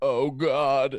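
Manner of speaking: very loud, sudden cry. Retelling a road trip, imitating Brian calling out. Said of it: "I'm doing an impression of Brian".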